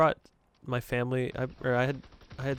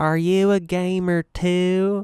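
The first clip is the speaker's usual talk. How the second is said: booming, very slow, loud, drawn-out Southern drawl; 6 semitones higher, 9 dB louder than usual. Retelling what the kid's mom asked during the deal: imitating a southern accent. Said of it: "she was really southern".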